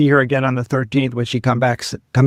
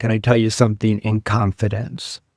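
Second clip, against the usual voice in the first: imitated very serious tone, lower pitch; 2 semitones lower than usual. Recounting walking up to the house, the speaker quotes what she said: retelling a very serious tone. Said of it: "she said in a very serious tone of voice".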